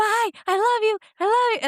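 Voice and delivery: put-on, shrill, very high, excited kid's scream. Retelling how the children said goodbye from their car seats: imitating kids screaming. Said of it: "they're both just, like, screaming it".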